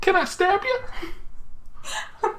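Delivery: very slow character voice, every word drawn out. Showing another speaker a favourite character to voice: Ellie voice. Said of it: "I kinda like talking as Ellie".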